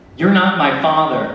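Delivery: slow, loud yelling. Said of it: "and then he yelled".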